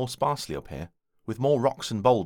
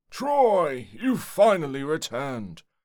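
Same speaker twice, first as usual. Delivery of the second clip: put-on cheerful, hearty older man's voice, drawn-out word; 4 semitones higher than usual. A man not yet in view greets Troy on his return, jolly older man's voice. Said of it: "states the voice of a jolly older man".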